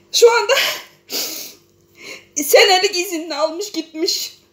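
speaking through tears. The speaker addresses a foreign audience about their own country, crying. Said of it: "Ben ağlıyorum ama kendimi tutamıyorum".

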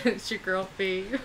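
loud delivery, cracking up with laughter throughout. Opening the show after her co-host's intro, laughing through her intro. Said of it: "I can't stop laughing".

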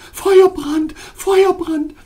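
shrill, piercing, high-pitched cry, repeated twice. A woman pulls back her hand, blowing on her palm, crying out repeatedly. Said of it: "während sie immer wieder ausrief".

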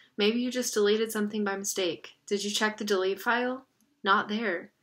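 ordinary delivery

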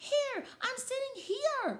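shrill, very high, loud hollering. Reading a character calling to Mother about her seat, hollering. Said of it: "I hollered to Mother".

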